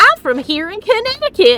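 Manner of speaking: put-on southern US accent, high and loud.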